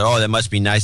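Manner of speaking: usual speaking voice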